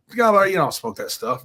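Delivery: ordinary delivery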